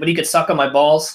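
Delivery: ordinary talk, nothing marked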